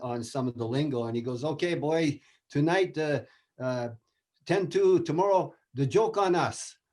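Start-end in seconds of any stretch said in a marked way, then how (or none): 1.4-6.7 put-on slow, halting, fumbling speech with a French accent. Retelling a coach's remark after a ten-two loss: Jacques Demers French accent. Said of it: "he had the French, uh, accent".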